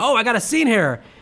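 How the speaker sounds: high, excited squeal of delight, thrilled. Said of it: "Sarah Michelle Gellar's excited".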